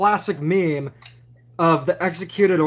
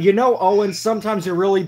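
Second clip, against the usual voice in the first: usual speaking voice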